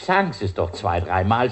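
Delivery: normal talking voice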